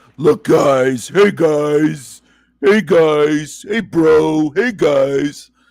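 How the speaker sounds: very slow, teasing parody voice. Mocking the other speaker by imitating how he keeps saying guys: imitating the other speaker. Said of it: "That sounds like you".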